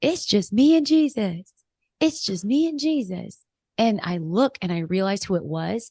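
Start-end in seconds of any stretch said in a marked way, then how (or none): 0.0-3.4 raised, high-pitched calling out. Retelling how a volunteer in a hallway shouted across: imitating someone shouting.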